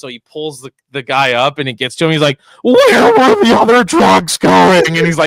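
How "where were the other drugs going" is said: slow, very high, very loud, swooping wail. Retelling a comedy video of a comedian in a bat suit: Batman voice. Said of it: "him trying to figure out his voice".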